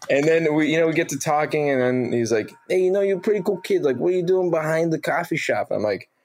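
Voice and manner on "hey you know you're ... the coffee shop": put-on New Jersey accent, higher pitch. Retelling what a bar manager said when asked for accent help: imitating Dave Latour's Jersey accent. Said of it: "Jersey, East Coast, Jersey guy from Hoboken".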